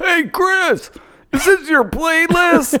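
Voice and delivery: high-pitched yell. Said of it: "I hear [name] yelling".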